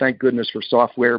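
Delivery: ordinary talk, nothing marked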